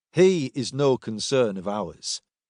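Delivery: plain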